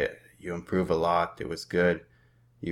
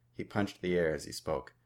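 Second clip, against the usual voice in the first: plain reading voice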